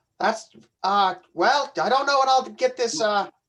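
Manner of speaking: flustered, stumbling, halting stammer tripping over words. Answering an offer of a ride in character: stumbling over words. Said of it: "As you're stumbling through your words".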